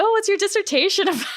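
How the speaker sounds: put-on high-pitched, fast, sweet young boy voice.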